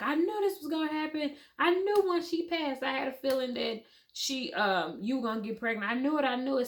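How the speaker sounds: acted-out high, weepy, tearful crying voice. Retelling what the husband said at that moment, imitating him crying. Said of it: "my husband is crying".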